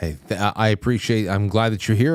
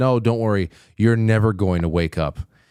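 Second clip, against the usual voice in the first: ordinary talk, nothing marked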